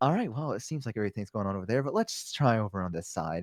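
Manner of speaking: odd, hushed, soft close-up murmur. Retelling how a dentist spoke while working on teeth: imitating the dentist half-whispering. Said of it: "why are you talking to me like this?".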